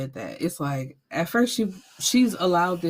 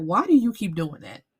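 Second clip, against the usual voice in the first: ordinary delivery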